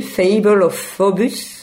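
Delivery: polished English accent. Announcing the title of the next piece on air: best English accent. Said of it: "je prends mon plus bel accent anglais".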